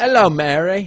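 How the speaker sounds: loud, high, belted, dirty British accent.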